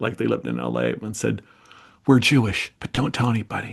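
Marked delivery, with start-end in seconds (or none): 2.1-3.7 whispered, secretive voice. Retelling what a grandmother told a thirteen-year-old girl: imitating a whisper. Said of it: "her grandmother from Eastern Europe whispers to her".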